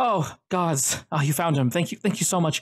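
gasping, relieved, grateful. A nurse speaks to the people who found the boy: breathing out in relief. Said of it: "she breathes a breath of air".

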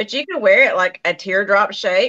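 normal talking voice

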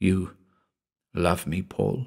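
hushed, soft, tender and gentle voice. A woman speaks to the man who has just cried out; softly. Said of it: "she said softly".

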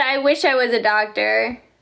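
plain

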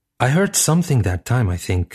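plain

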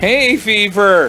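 gasped out. Reading a character's reply after collapsing in a heap sneezing, gasped. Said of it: "gasped Alan".

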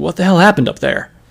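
frightened, fearful, terrified outburst. A pegasus questions a dazed alicorn after a blast, terrified. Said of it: "who was obviously terrified".

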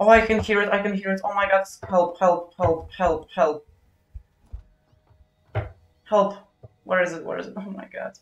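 high, frantic, paranoid pleading panic. Hearing a spider nearby, the speaker calls for help, panicky. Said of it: "I know I'm paranoid".

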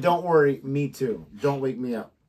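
plain

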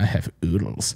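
sassy, sly, breathed-out near-whisper. Quoting a favorite scary movie line: sassy Anthony Hopkins impression. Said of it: "he's so sassy with it".

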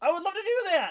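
voice cracking. Speaker talking casually, voice cracking. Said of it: "My voice cracked".

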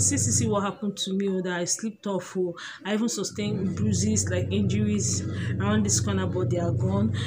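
ordinary talk

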